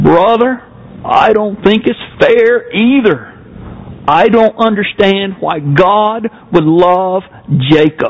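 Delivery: put-on slow drawl in a South Alabama accent. Retelling how Dr. Raymond answered Jay's question, Dr. Raymond's South Alabama drawl. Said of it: "with his South Alabama drawl".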